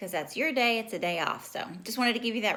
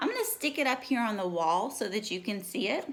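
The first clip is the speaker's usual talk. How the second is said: ordinary talk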